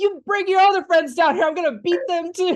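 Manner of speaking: very high, furious, raging screaming. Describing a film scene to a listener, imitating a character's angry screaming. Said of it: "just screaming and is like".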